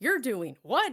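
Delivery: put-on shocked surprise. Imagining a shy younger self hearing about streaming: imitating shocked surprise. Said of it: "she'd be like".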